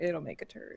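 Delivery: low, muttered grumble under the breath. Retelling what an uncle muttered after tasting beans: imitating a mutter under the breath. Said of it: "just under his breath".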